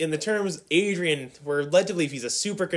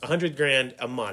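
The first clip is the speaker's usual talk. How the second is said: ordinary delivery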